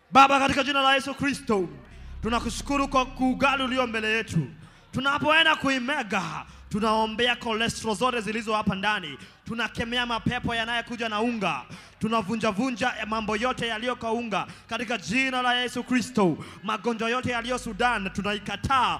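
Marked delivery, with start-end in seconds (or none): none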